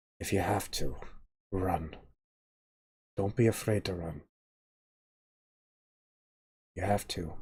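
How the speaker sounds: hushed, soft, private half-whisper. A father speaks to his son so another man won't hear, half-whispering. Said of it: "he kind of whispers this so Dugan doesn't hear".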